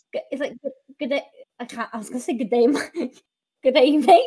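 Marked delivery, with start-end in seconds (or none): 2.3-4.2 slipping into Australian accent. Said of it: "That's Australian".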